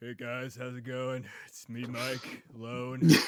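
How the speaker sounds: fake, dropped, deep and loud put-on voice. Joking that his voice just dropped, in a dropped deep voice. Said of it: "My voice just dropped".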